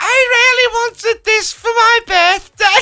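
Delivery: voice pushed up very high in pitch. Asked to do it again, repeating the line once more: very high-pitched voice. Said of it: "I was going higher and higher every time".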